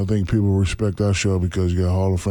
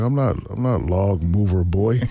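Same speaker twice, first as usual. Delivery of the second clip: ordinary delivery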